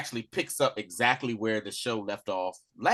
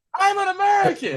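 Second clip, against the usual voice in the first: put-on man yelling, higher and louder; 8 dB louder than usual. Retelling a scene where an arrested man keeps protesting: imitating a man yelling. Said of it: "he's just yelling".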